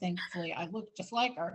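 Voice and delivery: ordinary talk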